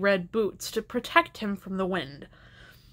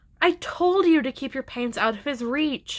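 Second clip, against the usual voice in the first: ordinary delivery, nothing marked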